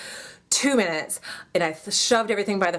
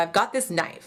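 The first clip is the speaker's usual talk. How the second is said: ordinary talk, nothing marked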